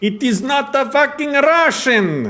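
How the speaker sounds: very high-pitched put-on Russian accent. Players arguing over whether an accent sounds russian; russian accent. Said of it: "That was more Russian".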